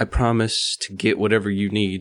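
ordinary delivery

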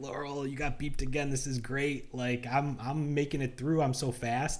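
slow, drawn-out, gloating, teasing tone. Retelling how you teased your companion for getting beeped at security, making fun of her. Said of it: "And I'm making fun of her".

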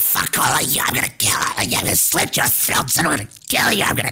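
little, gremlin-like creature voice. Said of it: "That sounds like a gremlin".

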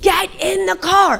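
shrill, high, stretched-out screaming. Laying on the horn in the driveway, the speaker retells screaming from the car. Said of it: "screaming in my car".

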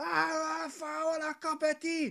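shrill, very high, full-volume shouting. Speaker retells what a woman kept shouting at him: retelling a woman's shouting. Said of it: "she kept shouting".

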